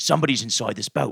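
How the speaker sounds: light, mildly done, slight put-on British accent. Retelling what a paranoid man on bath salts said: imitating a British-sounding accent. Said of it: "He's Australian?".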